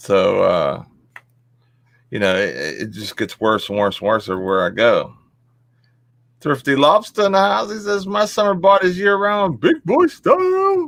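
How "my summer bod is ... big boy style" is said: very high, silly put-on cartoon creature voice. Repeating what an arriving guest says, done in best lobster voice. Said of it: "in my best lobster voice".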